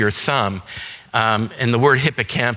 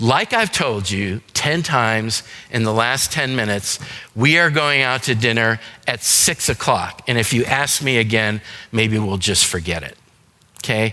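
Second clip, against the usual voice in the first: ordinary delivery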